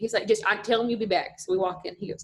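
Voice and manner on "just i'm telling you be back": put-on thick Southern accent. Retelling what he said, calling the speaker out of a meeting: thick North Mississippi accent. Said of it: "he's from North Mississippi and has a super thick accent".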